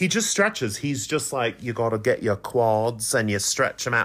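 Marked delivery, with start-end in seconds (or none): 1.6-4.1 poorly done, put-on British accent, male. Imitating a man who posts stretching videos: bad British accent. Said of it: "I can't do a British accent".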